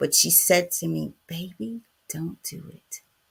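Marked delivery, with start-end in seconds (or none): 1.3-3.0 very soft, breathy, hushed whisper. Retelling what Mima said to the speaker, imitating Mima's soft-spoken voice. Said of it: "Just as soft spoken".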